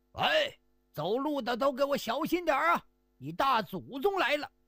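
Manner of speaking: rough burly man's call. Storyteller voicing a character in the tale, a burly man shouting. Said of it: "一个粗壮汉子喊".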